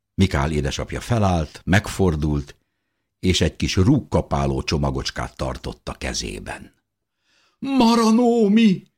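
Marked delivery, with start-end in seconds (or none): 7.6-8.8 shrill, very high, loud outcry. A woman sees her husband holding a tiny bundle and cries out. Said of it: "kiáltott fel Fischerné".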